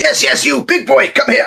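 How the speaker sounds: very high, rough holler, calling out. Calling across to a big creature to get his attention: calling out loudly. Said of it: "put my hands up on either side of my mouth".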